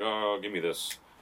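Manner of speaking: ordinary talk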